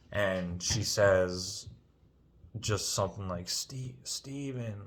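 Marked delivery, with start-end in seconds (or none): 3.4-4.7 gentle, soft, apologetic tone. Retelling how a woman called his name, mimicking a soft apologetic voice. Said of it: "like in a real soft voice".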